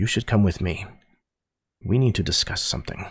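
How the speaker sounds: small subdued voice. Voicing a leader who turns to the group after dispersing a crowd: much smaller voice. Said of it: "a much smaller voice".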